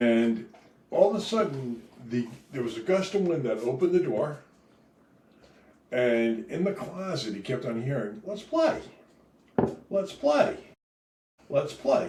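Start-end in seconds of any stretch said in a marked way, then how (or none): 8.3-12.1 high-pitched cartoon toy or doll voice. Retelling a creepy doll story, a doll calling from the closet: imitating a cartoon voice. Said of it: "in a cartoon voice".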